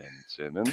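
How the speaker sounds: meek, very quiet, sheepish voice. Teasing a co-host by copying the answer: imitating a sheepish answer. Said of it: "Why'd you say it so sheepishly?".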